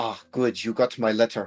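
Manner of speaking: put-on fancy gentleman voice. Voicing a fancy NPC greeting a player character: fancy gentleman voice. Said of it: "this fancy guy, and he says".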